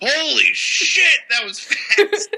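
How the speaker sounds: very high-pitched, very slow, full-lung shout. Retelling how an old fan in the front row reacted: imitating a man shouting. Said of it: "top of his lungs".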